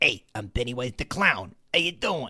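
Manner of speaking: put-on streetwise tough-guy Queens accent. Show how you remember the clown talking: Pennywise, tough guy Queens accent. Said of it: "tough guy Queens accent".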